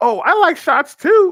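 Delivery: put-on high, slow, sassy young woman's drawl. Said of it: "the sassy chick, is like".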